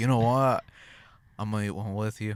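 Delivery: put-on attempted drunk, boozy Australian accent. Retelling a man who served pickled eggs and joined in: drunk Australian accent. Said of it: "That's my attempt at an Austra- a drunk Australian accent".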